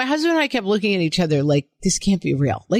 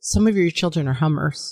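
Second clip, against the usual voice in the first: put-on very serious voice, lower; 4 semitones lower than usual. Reading out a listener's story about a first grade teacher: imitating a very serious voice. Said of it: "she said in a very serious voice".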